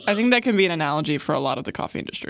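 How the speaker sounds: plain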